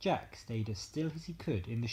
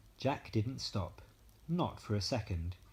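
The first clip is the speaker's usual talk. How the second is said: usual speaking voice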